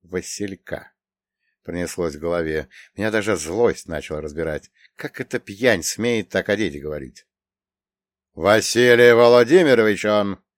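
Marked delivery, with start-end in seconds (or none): 8.3-10.3 firm, insistent, raised voice. The narrator answering Grishka's sneer about Vasilka, speaking firmly. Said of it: "твердо произнес я".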